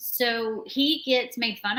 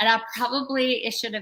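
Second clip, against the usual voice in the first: ordinary delivery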